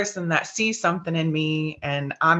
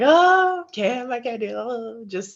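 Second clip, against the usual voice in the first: mock crying voice, pitched up; 7 semitones higher than usual. Speaker retelling pleading with Kim that she could not stay: retelling crying. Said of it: "I'm crying".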